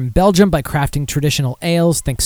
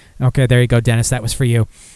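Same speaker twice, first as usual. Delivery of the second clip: usual speaking voice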